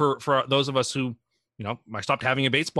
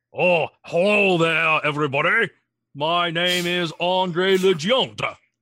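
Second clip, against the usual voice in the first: slow, high, stretched delivery; 5 semitones higher, 4 dB louder than usual. Asked to perform it, doing an Andre the Giant impression. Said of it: "let's hear your Andre the Giant then".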